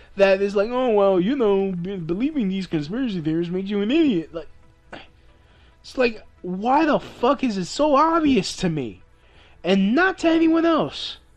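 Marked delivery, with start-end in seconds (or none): 0.7-4.3 snooty, superior pseudo-intellectual voice with sneering know-it-all tone. Mocking someone who calls believing conspiracy theories idiotic: mocking a pseudo-intellectual. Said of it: "someone thinks that they're such a fucking pseudo-intellectual".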